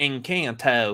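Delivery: Anglicized pronunciation and accent.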